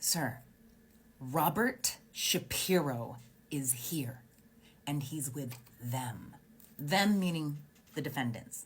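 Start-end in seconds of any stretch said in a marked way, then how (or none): 0.0-6.3 hushed whisper, very slow and drawn out. Retelling an officer telling the sergeant who arrived: imitating an officer whispering. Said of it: "I hear this officer whisper into his ear".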